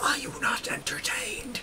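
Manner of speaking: very high, loud, forceful stage whisper. During a prison break, the player's character turns around, in a shout whisper. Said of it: "I whisper, kind of like the, you know, the shout whisper".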